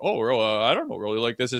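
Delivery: put-on shocked, surprised tone. Retelling a coach's reply to a request for more ice time: imitating a shocked coach. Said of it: "shocked I'm even asking".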